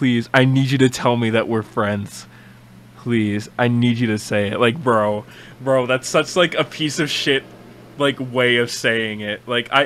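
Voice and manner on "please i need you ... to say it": put-on subtle, quietly panicked pleading tone. Repeating a character's line from the clip, imitating subtle panicked pleading. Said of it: "the subtle panic in his voice".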